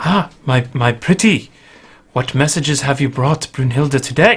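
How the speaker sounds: woman's voice, in character. Narrating a scene, the speaker voices a woman heard through a chimney: woman's voice. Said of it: "you hear a woman's voice that says".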